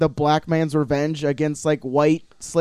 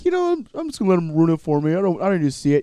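taunting, mocking voice with swooping sing-song. Mocking a listener who stays in their chair: mocking imitation of a listener. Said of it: "being all like".

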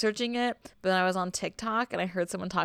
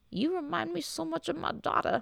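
put-on very high, rough, creaky old man voice; 10 semitones higher, 4 dB quieter than usual. Narrator quoting a driver speaking to a hitchhiker, old man voice. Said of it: "whatever old man voice is".

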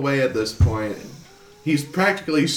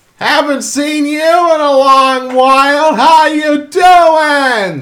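very loud, shrill, high, slow, drawn-out scream; 14 semitones higher, 14 dB louder than usual. Voicing a character calling out to the party: screaming NPC. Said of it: "And he's just screaming".

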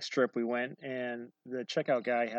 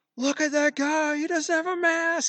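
put-on shrill, loud, high-pitched child's screaming; 8 dB louder than usual. Retelling what a child shouted in a store: imitating a child screaming. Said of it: "He's screaming it so loud that whole store can hear it".

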